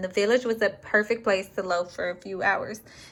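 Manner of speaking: ordinary talk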